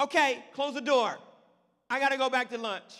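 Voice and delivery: loud shouting.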